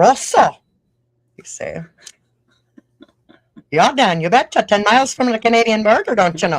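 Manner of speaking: loud, northern Minnesota Upper Midwest accent. Speaker telling of growing up in roseau near the canadian border, in a minnesota accent. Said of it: "pretty good accent".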